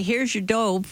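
acted loud calling. Acting out what a man will say as he hands it over, in a loud voice. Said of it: "in a loud voice".

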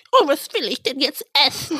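put-on little-child babyish baby-talk voice. Speaker showing how to get out of a bad date, in baby talk. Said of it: "Mit weißt Babysprache?".

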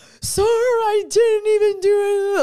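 very high, loud mock crying through sobs. Retelling pleading with the man issuing a ticket, imitating own sobbing. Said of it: "I'm like crying".

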